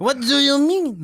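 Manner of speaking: put-on French accent, pitched very high. Asked if that's the French accent, redoing the line in a French accent. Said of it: "That's better".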